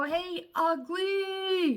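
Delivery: very high, shrill, drawn-out, ugly screech. Retelling how a bully shouted out the bus window: imitating someone screaming. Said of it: "he's screaming out the window".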